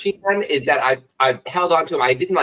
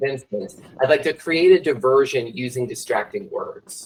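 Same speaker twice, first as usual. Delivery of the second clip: ordinary delivery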